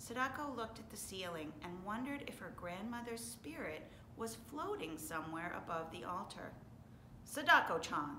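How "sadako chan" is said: very loud, sharp call-out. Mr. Sasaki addresses Sadako at the family altar, sharply. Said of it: "Mr. Sasaki said sharply".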